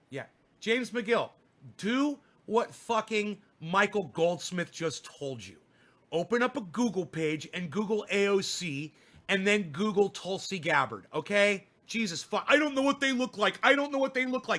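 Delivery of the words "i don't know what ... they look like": pathetic, helpless repeating, high and rushed. Scolding James McGill, mocking James McGill sounding helpless. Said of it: "you sound fucking helpless".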